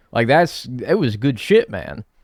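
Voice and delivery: normal talking voice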